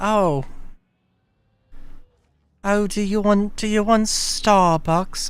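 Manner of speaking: put-on high British accent. Retelling a mother's offer after a family lunch: imitating mom in a British accent. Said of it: "I don't know why my mom is British now".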